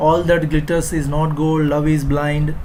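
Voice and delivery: ordinary talk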